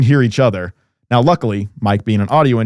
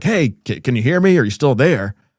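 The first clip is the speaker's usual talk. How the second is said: mild half-yelled call, straining to be heard; 3 semitones higher than usual. Retelling how two callers could not hear each other over static, retelling people yelling. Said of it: "start kind of trying to yell at each other like".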